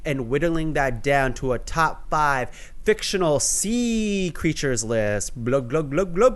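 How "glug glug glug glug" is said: gurgling, bubbly underwater glugging noise. Making their underwater sound effect after describing a list, underwater glugging sound. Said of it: "That's my underwater sound".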